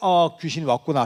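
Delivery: ordinary talk, nothing marked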